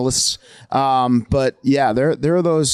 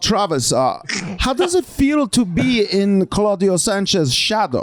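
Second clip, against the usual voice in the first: put-on German journalist voice, higher pitch; 7 semitones higher than usual. Imitating a blunt interviewer asking a question: imitating a German journalist. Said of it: "so I could do this impression".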